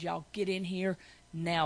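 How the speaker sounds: meanest, stern, no-nonsense mother voice. Retelling calling the family together in a mean mama voice. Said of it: "my meanest mama voice".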